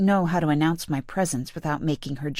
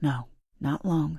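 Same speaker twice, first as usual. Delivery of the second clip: soft half-whisper with fear underneath; 4 dB quieter than usual. Reading a story aloud, voicing a character's short reply: half-whispering. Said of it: "she whispers".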